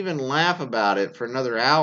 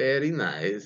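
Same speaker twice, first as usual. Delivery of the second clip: put-on accent with rolled R sounds; 2 semitones lower than usual. Reading a submission where the boyfriend says it: Borat impression. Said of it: "in his best Borat impression".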